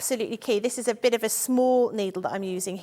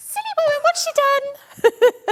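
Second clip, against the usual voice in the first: very high, loud, drawn-out put-on rabbit voice; 6 dB louder than usual. Voicing a sewn rabbit again after being asked for another voice: put-on rabbit voice. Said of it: "But in a different voice".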